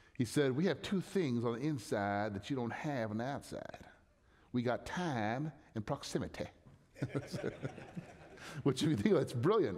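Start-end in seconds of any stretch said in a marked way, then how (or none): 0.6-6.5 put-on Mississippi good old boy accent and voice. Quoting what a man said, in his good old boy Mississippi voice. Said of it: "in his good old boy Mississippi voice".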